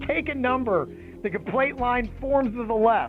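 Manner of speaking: usual speaking voice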